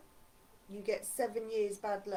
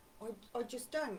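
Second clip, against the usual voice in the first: ordinary talk, nothing marked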